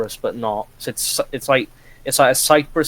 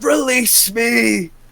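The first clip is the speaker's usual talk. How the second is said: put-on, very high, all-out, full-throated shout; 10 semitones higher, 3 dB louder than usual. Retelling a meme where people kneel and shout: shouting like Joseph Seed.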